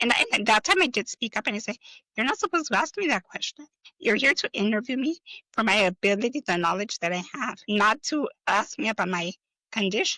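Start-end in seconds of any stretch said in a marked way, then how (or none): none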